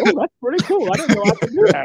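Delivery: high, loud, delighted surprise. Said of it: "I said".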